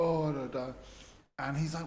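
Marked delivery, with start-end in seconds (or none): 0.0-0.7 furious and tearful angry crying outburst. Retelling how an upset woman came over: imitating someone crying in anger. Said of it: "furious and upset and comes over crying".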